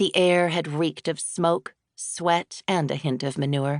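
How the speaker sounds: ordinary delivery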